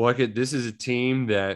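ordinary talk, nothing marked

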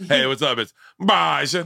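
a little put-on English accent. Introducing himself for a joke: mock English accent. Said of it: "let me introduce myself that way".

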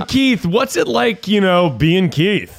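slow, high, drawn-out delivery with rising pitch. Asking another speaker what it is like being Keith: Jerry Seinfeld impression. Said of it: "I'm trying to do the Jerry Seinfeld".

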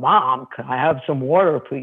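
deepest, very gravelly voice, dropped way down. A mother demonstrating the voice she asked her son to use: deepest gravelly voice. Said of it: "And I'd be very gravelly".

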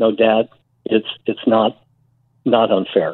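plain

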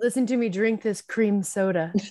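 mock, sultry, sexy ASMR voice. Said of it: "She's like".

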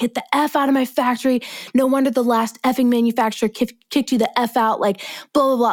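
play-acted furious, high, heated, snapping cursing rant. Retelling the manufacturer cussing her out: imitating someone screaming. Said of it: "started screaming at me".

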